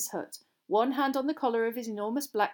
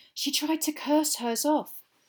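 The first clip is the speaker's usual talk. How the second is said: hushed, much higher; 5 semitones higher than usual. A narrator reads a Hufflepuff student speaking during a lesson, in a hushed voice. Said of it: "in a hushed voice".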